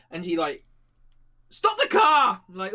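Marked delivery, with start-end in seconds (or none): 1.5-2.4 loud, high-pitched shouting. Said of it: "shouting out the window".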